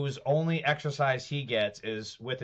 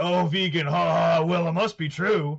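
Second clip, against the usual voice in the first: loud, sneering, mocking, gullible-sounding gush; 3 semitones higher, 6 dB louder than usual. Mocking the followers who believe a campaign claim: mocking imitation of gullible followers. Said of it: "They're just like".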